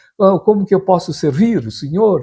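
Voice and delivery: put-on hoarse, high Portuguese accent from Portugal. Retelling how an old shoemaker offered to serve you, imitating his Portuguese accent. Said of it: "ainda com sotaque assim".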